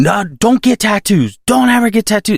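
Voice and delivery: mock, shrill, very high-pitched scream. Retelling an interview guest's advice to young women: imitating someone screaming. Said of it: "she screamed at me".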